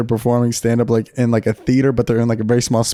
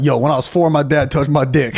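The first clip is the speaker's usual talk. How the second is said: ordinary talk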